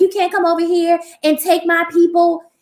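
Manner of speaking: mock, high, shouted scolding yell. Retelling what a coworker yelled at the call center: imitating someone yelling. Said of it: "she yelled at me like".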